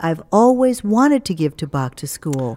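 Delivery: plain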